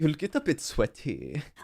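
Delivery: put-on mimicked German accent. Unable to stop repeating what German-accented speakers say, mimicking a German accent. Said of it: "repeat everything that they say that has a German accent".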